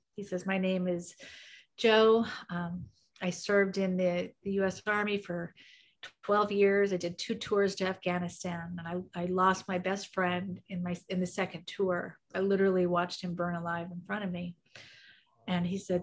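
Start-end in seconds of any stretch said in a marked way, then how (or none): none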